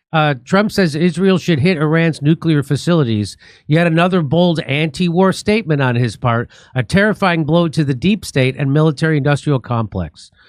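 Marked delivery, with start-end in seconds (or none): none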